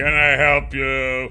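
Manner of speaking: haughty, condescending voice. Reading the heavy man addressing Nath, arrogant voice. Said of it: "The heavy man said in an arrogant voice".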